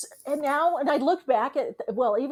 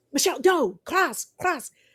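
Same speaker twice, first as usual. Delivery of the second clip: insistent, carrying stage whisper; 5 semitones higher than usual. Retelling a tour guide warning the speaker away: imitating an urgent loud whisper. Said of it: "kind of urgent, s-, whispering kind of loud".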